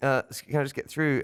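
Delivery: high, sheepish, polite tone.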